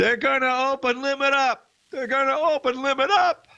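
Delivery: very high, shrill, quivering, frantic scream. Recounting a man coming on air before the market opened, imitating someone screaming. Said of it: "He kept screaming that".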